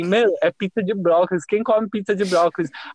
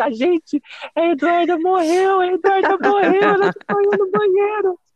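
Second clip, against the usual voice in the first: acted, very high, repeated yelling; 13 semitones higher than usual. Retelling finding someone passed out at a party: imitating own past shouting. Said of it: "E aí eu comecei a gritar".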